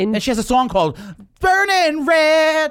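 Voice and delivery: very high, very loud, shrill screaming. Talking with another speaker on a microphone, screaming into the mic. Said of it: "Can you stop screaming in the microphone".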